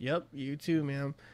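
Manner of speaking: very slow, very soft, hushed, dragged-out delivery. Retelling how a man answers a tenant, imitating very slow speech. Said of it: "Very slow like that".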